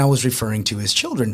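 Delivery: ordinary talk, nothing marked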